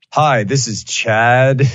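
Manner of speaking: put-on southern pilot voice. A passenger imagines their ideal pilot greeting the cabin; Chad, slight southern accent. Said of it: "Maybe like a little bit of a southern accent".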